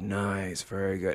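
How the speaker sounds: deep voice, pitched low. Retelling a voice heard from far off after an audition scene: imitating a deep voice. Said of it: "I heard this deep voice go".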